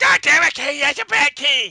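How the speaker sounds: very high, loud, badly done voice. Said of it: "I can't do Cartman voice".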